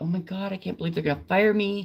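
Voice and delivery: mock scared, panicked, frantic voice. Retelling her own words walking into a board meeting: retelling own panicked words. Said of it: "just panicking".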